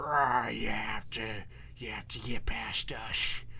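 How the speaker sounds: low monster creature voice. Showing the monster voices used in tabletop games, monster voice. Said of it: "Or I do other monster voices".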